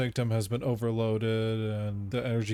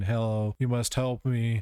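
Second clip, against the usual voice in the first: ordinary talk, nothing marked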